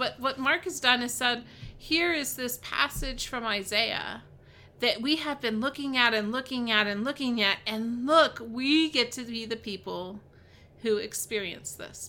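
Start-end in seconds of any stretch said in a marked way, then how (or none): none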